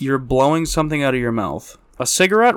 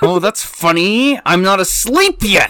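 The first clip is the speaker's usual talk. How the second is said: mocking, teasing put-on voice; 6 semitones higher, 3 dB louder than usual. Teasing a partner for falling asleep, doing a mocking imitation of partner. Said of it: "I don't sound like that".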